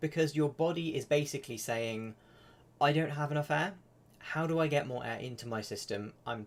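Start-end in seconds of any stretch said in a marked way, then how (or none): none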